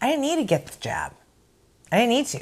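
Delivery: high swooping sing-song. Acting out a reality show scene, imitating Vicky. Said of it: "And here's Vicky going".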